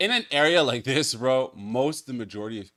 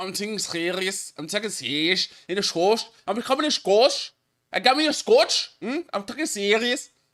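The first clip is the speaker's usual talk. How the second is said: put-on Scouse accent with Irish tinge, pitched up; 9 semitones higher than usual. Mimicking a speaker who insists he is serious: mock Scouse accent. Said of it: "almost like Irish meets, like, the British accent".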